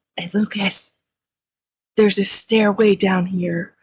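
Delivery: wary, cautious stage whisper. Calling to a fellow player about a stairway going down, half-whispering. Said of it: "I'm gonna say it in a whisper".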